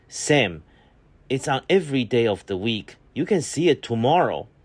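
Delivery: acted irritated, impatient tone. Retelling own past reply to a whining child: imitating own irritated reply. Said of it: "irritated with him for being so whining".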